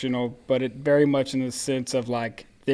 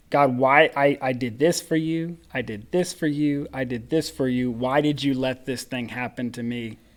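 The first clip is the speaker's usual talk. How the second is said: mock, aggrieved, complaining plea. Imitating Christians going through something tragic, questioning God: imitating an aggrieved plea to God. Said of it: "I hear this in Christians' voice when they go through something that's tragic".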